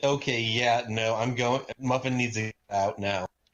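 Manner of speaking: ordinary delivery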